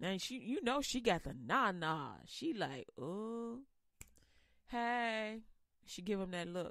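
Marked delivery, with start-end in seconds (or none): 3.0-5.4 put-on seductive voice. Retelling how Eve approaches her husband: seductive voice as Eve. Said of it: "that seductive look".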